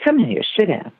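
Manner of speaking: imitated woman's voice, pitched high. Retelling what she said when he ran around: imitating her voice. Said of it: "Please do her voice".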